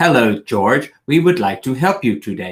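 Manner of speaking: machine-like, robotic automated assistant voice. Describing the usual AI voice on phones, the speaker demonstrates it: robotic AI assistant voice. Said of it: "it's a very robotic automaton".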